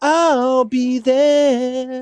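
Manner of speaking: put-on high, whiny, odd mixed-accent voice, drawl on "there". Mocking a friend's voice as sounding like a five-year-old: imitating Yayan's voice. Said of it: "it's kinda like".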